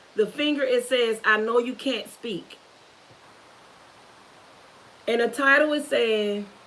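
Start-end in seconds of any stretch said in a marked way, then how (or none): none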